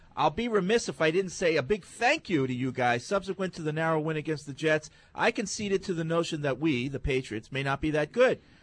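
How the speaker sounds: ordinary delivery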